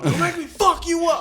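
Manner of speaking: full-throated, shrill yell, very loud and high. Retelling how a man yelled at a couple: imitating a man yelling. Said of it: "He yells out".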